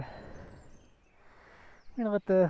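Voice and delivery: slow, soft, winded, out-of-breath speech. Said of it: "I'm breathing hard".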